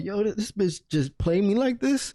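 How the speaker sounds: put-on freaked-out, stressed outcry, high with disbelief. Retelling walking outside after the mom's question: retelling being stressed out. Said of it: "I'm stressing the fuck out".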